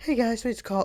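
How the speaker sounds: put-on childlike little kid voice. Speaker describes the voices he did for his characters, Colin's child voice. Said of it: "he had like a child voice".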